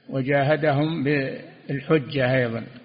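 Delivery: normal talking voice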